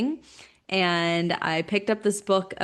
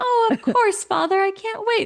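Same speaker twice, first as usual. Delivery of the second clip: put-on sugary, sweet, eager, obliging child voice; 4 dB louder than usual. Retelling how a parent read a book aloud, imitating a sweet child. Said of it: "the kids would be so sweet".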